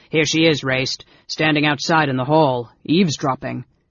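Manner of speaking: plain reading voice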